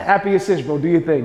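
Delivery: plain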